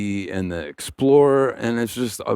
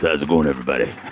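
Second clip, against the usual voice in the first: deep, very low radio announcer voice; 7 semitones lower than usual. Newly introduced guest greeting everybody in his radio voice. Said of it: "This is my radio voice".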